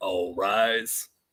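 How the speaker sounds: voice deliberately dropped low, put-on deep voice. Doing Mister Allen's voice for the words all rise: Mister Allen voice. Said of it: "That was my my deep voice".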